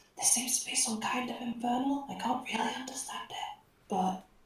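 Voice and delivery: soft, hushed whisper in a character voice. Turning to Ezra in character to relay news: whispering in character. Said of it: "whisper voice".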